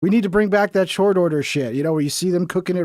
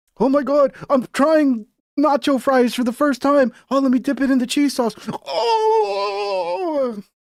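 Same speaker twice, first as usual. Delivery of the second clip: exaggerated fake delight, pitched up, drawn-out "oh"; 8 semitones higher than usual. Mocking food videos, acting out an over-the-top reaction to everything. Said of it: "like over the top reaction to everything".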